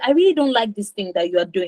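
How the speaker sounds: ordinary delivery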